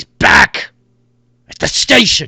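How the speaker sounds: very loud, high hollered yell. In a game, describing a human voice yelling back at the players, yelling back. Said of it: "you hear the human like yell back at you like".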